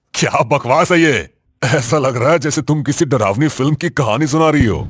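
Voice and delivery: jovial, teasing, carefree. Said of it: "हंसमुख, बेफिक्र और हर चीज का मजाक उड़ाने वाला".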